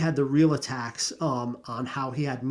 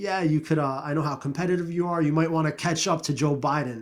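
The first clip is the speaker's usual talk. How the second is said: put-on heavy sarcasm throughout, quick. Recounting a man's remark to another man, retelling a sarcastic jab. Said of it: "Very sarcastic".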